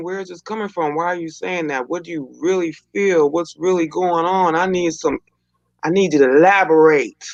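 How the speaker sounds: usual speaking voice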